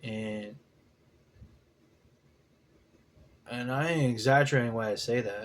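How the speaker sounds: voice straining to hold back tears. Recalling a meeting with the band, holding back tears. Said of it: "Trying not to cry".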